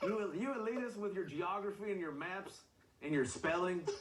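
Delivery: put-on Southern yokel voice.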